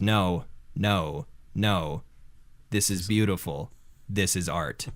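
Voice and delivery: toneless, flat, deadpan monotone delivery. Retelling a man's reply to a woman in the crowd, in a flat monotone. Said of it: "in you know the flat monotone".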